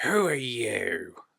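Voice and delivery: cranky, not scary voice. Showing how he approaches a child to scare them; grouchy voice, not scary. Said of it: "not in a scary voice, but more like a grouchy voice".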